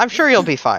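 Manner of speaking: loud, hollow, deliberately unconvincing, plainly insincere tone. Saying a reassurance as unconvincingly as possible: deliberately unconvincing tone. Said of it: "in a very unconvincing tone as possible".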